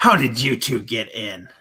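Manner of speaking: low, sneering, contemptuous, scornful voice. Game narrator voicing a young robed man looking up at two intruders, sneering. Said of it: "he just sneers and goes".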